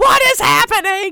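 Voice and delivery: high, loud, bewildered shout. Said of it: "she just looks at you guys and goes".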